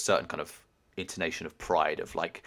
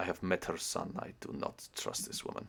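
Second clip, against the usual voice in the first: muttered under her breath, much quieter; 9 dB quieter than usual. Storyteller voicing Lola speaking to the one beside her, under her breath. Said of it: "under her breath".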